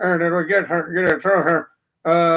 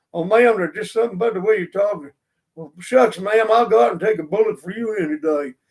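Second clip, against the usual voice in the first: smitten big dumb guy voice, fast. Describing how a woman's squeaky voice charms big guys, playing a great big dumb guy. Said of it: "the great big dumb guy".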